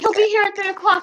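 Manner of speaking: very high, loud, pumped-up excited rambling. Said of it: "she was, like, so pumped".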